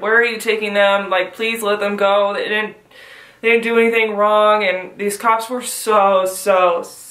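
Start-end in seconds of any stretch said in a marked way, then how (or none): 0.0-4.6 put-on panicked, pleading voice. Retelling pleading with cops to release friends: retelling own panicked plea. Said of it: "I was just freaking out".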